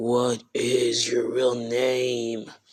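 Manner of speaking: mock heavy, slow, dark tone. Retelling a scene where Naofumi demands her real name: imitating Naofumi's dark tone. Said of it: "dark tone".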